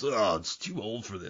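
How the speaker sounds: put-on gruff, aged actor voice. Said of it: "his voice is Brian Cox".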